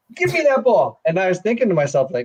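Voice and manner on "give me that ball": imitated scream, higher. Retelling a run while a teammate took on defenders: retelling a scream. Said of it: "and I'm screaming".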